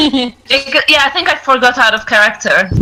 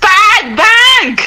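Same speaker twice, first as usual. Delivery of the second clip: yelling, higher; 9 semitones higher than usual. Answering a doorkeeper's demand for the password: shouting the password. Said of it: "I shout back".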